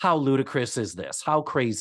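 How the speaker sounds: ordinary talk, nothing marked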